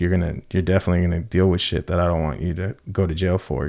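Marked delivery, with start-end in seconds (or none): none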